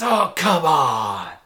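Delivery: hollered shout. Describing a man people think is nuts, retelling a shout. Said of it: "He just shouts".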